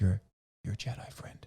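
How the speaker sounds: hushed, secret-like whisper. Retelling what one character whispers to another in a film, whispering. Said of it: "she kind of whispers to him and says".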